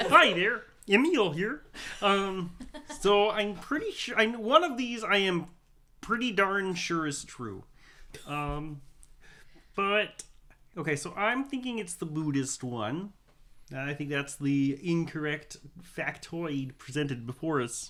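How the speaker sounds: cartoonish felt-puppet character voice. Giving a quiz answer on which factoid is false, in a Muppet voice. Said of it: "do it in a Muppet voice?".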